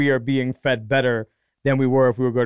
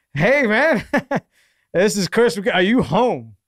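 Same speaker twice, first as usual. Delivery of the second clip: put-on Texas accent, pitched up higher; 8 semitones higher than usual. Retelling a phone call he got, imitating Chris's Texas accent. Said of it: "the most perfect Texas accent of all time".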